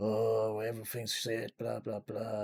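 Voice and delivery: somewhat gruff character voice. Describing a first-person shooter, mimicking the weird guy talking to you, gruff voice impression. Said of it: "It's got a really bit of a gruff voice".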